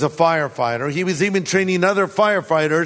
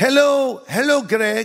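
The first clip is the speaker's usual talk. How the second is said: sweet, high, put-on little old lady accent; 6 semitones higher than usual. Retelling what an old lady in her mid-90s said to him, imitating an old lady's accent. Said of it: "I'm trying to do their accent".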